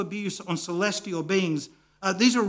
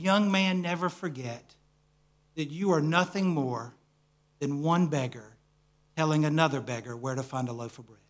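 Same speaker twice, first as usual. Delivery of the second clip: imitated whisper, lower pitch; 4 semitones lower than usual. Retelling what an older man praying over him said: retelling a whisper. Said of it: "he whispers in my ear".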